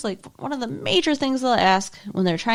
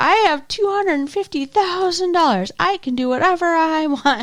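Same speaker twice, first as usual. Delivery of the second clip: mock high, slow, boastful bragging yell; 6 semitones higher than usual. Retelling a man called David on a supermarket sweep, imitating David yelling. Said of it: "He's like he's like yelling through".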